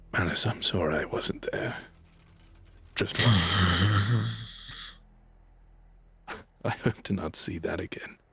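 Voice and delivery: voiced, stretched-out stage whisper. Playing his character as the group walks on, half-whispering to himself. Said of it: "I'll just whisper to myself".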